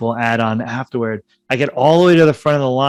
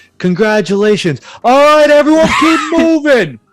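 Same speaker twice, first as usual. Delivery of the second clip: very high, loud put-on New York voice; 13 semitones higher, 6 dB louder than usual. Retelling what the rink worker said after the proposal: imitating the New Yorker rink worker. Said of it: "the New Yorker guy who worked at the ice rink".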